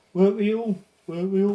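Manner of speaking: put-on Brummie accent.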